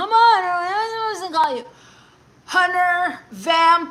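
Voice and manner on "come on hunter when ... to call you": high, slurred, words blurring into each other. Rereading a viewer's chat message aloud, running words together voice. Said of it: "In my Hunter Dark Side running words together voice".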